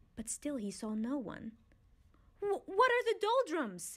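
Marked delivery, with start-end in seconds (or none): 2.4-4.0 very high, loud calling out. Hearing an unseen voice, he calls out to whoever will answer, loudly. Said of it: "He cried loudly".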